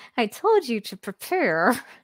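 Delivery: slow, seething annoyance through gritted teeth. Recapping an episode, acting out a character's line: imitating Lady Wheeler's gritted smile. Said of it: "like a gritted smile".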